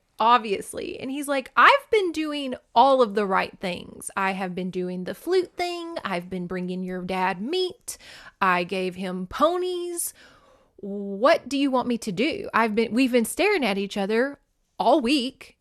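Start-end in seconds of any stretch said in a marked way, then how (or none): 1.6-15.4 mock angry, worked-up, protesting tone. Retelling a rejected character's complaint: imitating someone getting mad. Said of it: "And he kinda gets mad".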